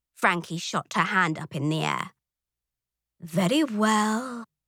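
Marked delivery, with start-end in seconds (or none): 3.2-4.5 said with a sigh. Narrator reads the teacher answering an eager pupil, sighing. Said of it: "Miss Inspine sighed".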